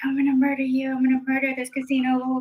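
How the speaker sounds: creepy, dark, menacing serial-killer voice. Dealer retells a losing player at his table, imitating his mutter under breath. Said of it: "under his breath, he sounded like a serial killer".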